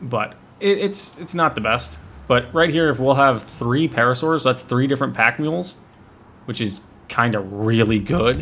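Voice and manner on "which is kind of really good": breaking voice, cracking mid-phrase. Explaining that three parasaurs make three pack mules: voice cracking. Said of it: "My voice just cracked terribly on that one".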